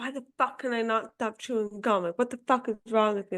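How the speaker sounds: angry, self-berating, ragging ranting tone. Speaker recounting the pressure on herself, imitating an angry inner voice. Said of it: "that constant angry voice just like ragging on me".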